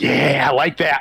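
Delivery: gleeful, grinning evil scientist voice. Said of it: "evil scientist, like, grin on his face".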